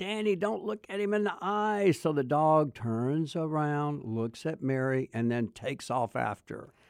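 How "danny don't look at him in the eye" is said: play-acted screaming, pitched very high. Recounting a dog attack, a woman on a hill warns a boy; retelling a scream. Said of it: "Mary's screaming over on the hill saying".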